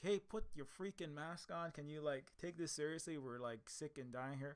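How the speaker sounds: plain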